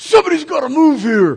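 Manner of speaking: very loud, high, shrill gruff holler. Recounting a stranger yelling out in a store: imitating a gruff yell. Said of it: "I hear this gruff voice yell out".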